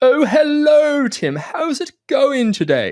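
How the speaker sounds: put-on very high-pitched, proper upper-class British accent. Speaker showing how a very proper british man talks: really posh british accent. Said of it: "really really posh".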